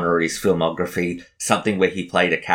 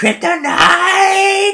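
higher, louder mock screaming man voice; 7 dB louder than usual. Describing a slow-motion film scene: imitating Nicolas Cage screaming. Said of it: "we've got Nicolas Cage doing".

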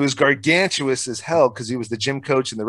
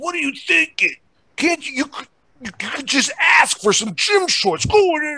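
put-on screaming, much higher. Retelling how the coach screamed at him, retelling a coach screaming. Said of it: "he's like screaming".

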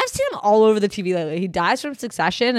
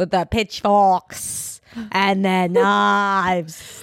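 very slow put-on English accent. Joking with others about spoiling it for the audience: put-on English accent. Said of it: "That was my English accent".

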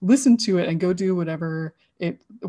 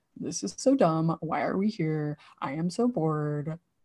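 put-on soft kid-like grumbling; 5 dB quieter than usual. Telling of walking into a museum and hearing the inner child voice. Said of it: "my inner child voice go".

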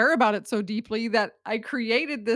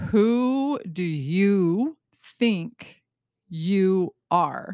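very slow, grand, theatrical, with drawn-out "you"; 2 semitones lower than usual. Posing the podcast's central question with all the drama: dramatic. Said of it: "all the drama for this simple question".

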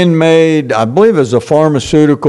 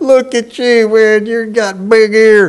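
play-acted jeering, belittling, high, drawn-out sneer; 6 semitones higher than usual. Retelling how everybody mocked someone's big ears: imitating mocking taunt. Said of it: "the derision and the mocking".

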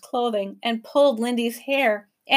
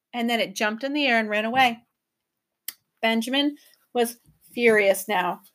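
ordinary delivery

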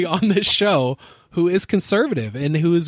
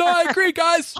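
very high, distant, acted-out yell; 12 semitones higher than usual. Retelling how a speaker sounded from the kitchen: imitating someone yelling from far away. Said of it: "You're yelling, like".

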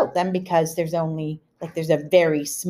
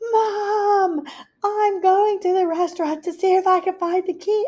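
play-acted, very high, loud hollering; 14 semitones higher than usual. Retelling calling to a hard-of-hearing mom in a locked stall: imitating own past yelling. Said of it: "you don't have to yell".

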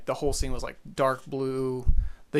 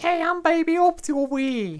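put-on New Jersey accent, very high, squeaky, slow, swooping, sing-song; 3 dB louder than usual. Describing a doll character to friends, doing Baby Oopsie in a New Jersey accent. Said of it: "He's got kind of like New Jersey accent".

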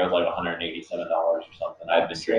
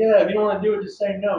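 heated, raised yelling, pitched up. Retelling a late-night call to another assistant manager: retelling own yelling. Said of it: "And I started yelling at him".

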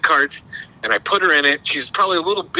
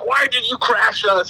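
put-on high child voice, yelling; 5 semitones higher than usual. Recounting a crash, voicing the daughter yelling at the speaker: retelling her kid's yell. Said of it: "She's yelling at me".

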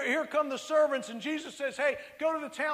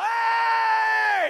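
very loud, hoarse, rough, drawn-out yell; 8 semitones higher, 9 dB louder than usual. Recalling mixing cement at sixteen, the speaker mimics his boss: imitating the boss yelling. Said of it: "the boss begins to yell".

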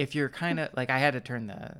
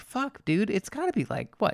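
sudden, startled, high exclamation. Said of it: "and I'm like".

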